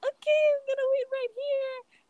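put-on very high-pitched silly girl voice.

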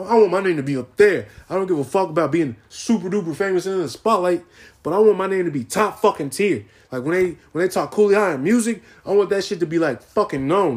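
hyped-up, fired-up excitement, pitched high. Talking about their music ambitions, the speaker gets hyped up. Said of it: "I'm getting hyped up over here".

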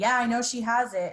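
play-acted angry, insistent, cross delivery. Retelling a dream where the other person kept insisting: imitating someone angry. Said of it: "David was real angry and kept saying".

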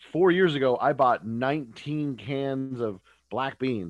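loud, slow, proud boasting.

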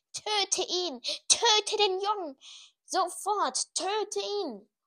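screaming, very high, drawn-out shout. Voldemort screams again and again as Quirrell crumbles to ash; shouting. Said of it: "Voldemort schrie währenddessen ständig".

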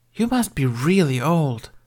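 frank, unembarrassed aside. Aeola, looking at Master Jyn with hero worship, adds something, unabashed tone. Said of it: "She added in an unabashed tone".

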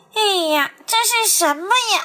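strange pinched-nose voice. Reading a story, the monkey mocks the platypus: pinched-nose odd voice. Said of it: "猴子捏着自己的鼻子，怪声怪气的说".

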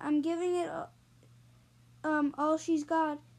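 ordinary delivery

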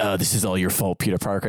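put-on angry scolding voice. Retelling a film scene about Doctor Strange blaming Peter Parker: imitating Doctor Strange getting super mad. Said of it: "he gets super mad at him and he's just like".

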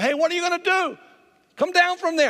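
play-acted shrill, very high shouting. Retelling warning boys on a high wall to come down: imitating yelling at campers. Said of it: "I'm yelling at them".

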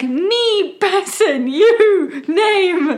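put-on very slow, high, baby-simple phrasing. Addressing a strange being in simple words: simple, not intentionally condescending speech. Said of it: "not intentionally condescending, but it's like".

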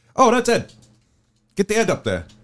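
English accent imitation. Retelling how people with English accents said a name, in an English accent imitation. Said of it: "with their English accents".

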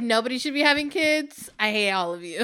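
ordinary talk, nothing marked

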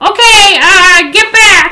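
very high, drawn-out, loud yell. Speaking in character, telling everyone to get back: yelling to everyone. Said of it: "I'm just gonna yell to everyone".

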